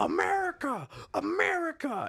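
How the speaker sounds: acted very high, wild, swooping scream. Recounting how he screamed out the car window, retelling a scream. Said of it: "he's screaming first out the year. Window".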